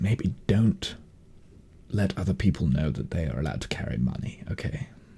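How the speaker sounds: very quiet, dropped very low voice. Game master voices a man who drops into a low voice. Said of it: "he kind of like goes into a low voice".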